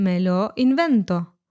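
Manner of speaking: normal talking voice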